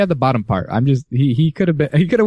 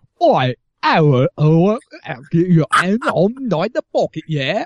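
put-on Cockney accent, much higher pitch; 5 semitones higher than usual.

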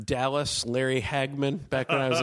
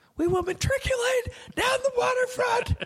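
raised shout, pitched up. Retelling rousing the group on Fourth of July: imitating own past yell. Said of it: "right when I yelled that".

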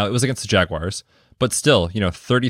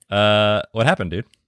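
usual speaking voice

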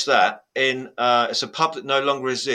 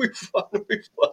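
put-on tearful crying shout, higher and quieter; 9 semitones higher, 4 dB quieter than usual. Retelling jumping up in the pub when his team won: imitating himself crying. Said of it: "I'm literally crying and go".

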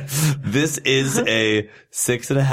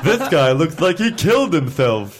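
high character voice with swooping pitch; 5 semitones higher, 3 dB louder than usual. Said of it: "you sound like Snagglepuss whenever you're talking from now".

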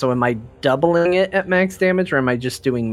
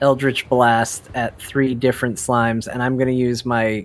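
ordinary delivery

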